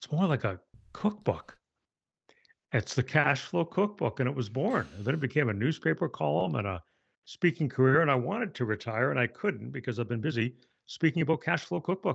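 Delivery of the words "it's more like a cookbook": private thought slipping out aloud. Retelling a remark once made under the breath: imitating muttering under breath. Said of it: "under my breath one day".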